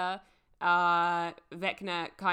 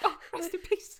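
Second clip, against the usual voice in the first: high, teasing mock voice with laughter. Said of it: "It's just the way you say it".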